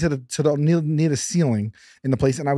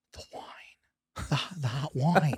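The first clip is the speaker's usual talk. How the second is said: whispering, quieter and slower; 10 dB quieter than usual. Retelling a whispered conversation with her: retelling a whisper. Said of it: "we're whispering this whole thing".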